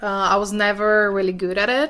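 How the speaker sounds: misplaced stress, "it" stressed long and loud, "never" stressed. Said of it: "Thais stresses the unimportant pronoun it".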